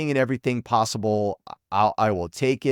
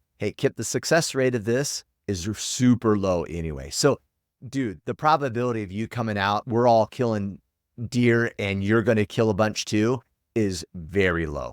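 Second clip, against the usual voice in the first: ordinary delivery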